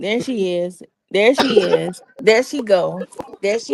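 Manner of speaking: ordinary talk, nothing marked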